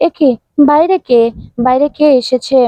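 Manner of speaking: ordinary delivery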